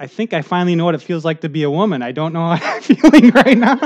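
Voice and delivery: laughing through the last line.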